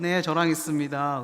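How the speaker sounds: mock overly sweet, coy, coquettish put-on voice. Retelling a phone call with a mother, answering in an acted sweet, coy voice. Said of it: "목소리가 되게 간드러지죠".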